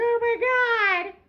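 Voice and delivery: mock very high frantic wail, stretched "my". Acting out panicking demons running around in a frenzy: mock panicked cry. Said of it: "running around in a frenzy like".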